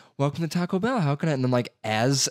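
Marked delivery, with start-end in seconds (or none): 0.2-1.3 put-on high girl's voice. Describing pulling up to order at Taco Bell, imitating a girl's voice. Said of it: "a girl's voice going".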